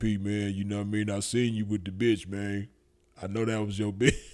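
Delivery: put-on deep-voiced Memphis accent. Retelling a story, quoting what Slick Vic said later on: Slick Vic's deep Memphis voice. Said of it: "Slick Vic got that deep Memphis voice".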